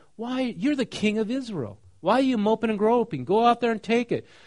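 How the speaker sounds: high, loud, goading voice.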